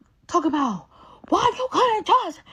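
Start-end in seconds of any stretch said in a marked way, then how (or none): 1.2-2.3 high, loud, slow yelling. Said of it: "She called me yelling in my phone".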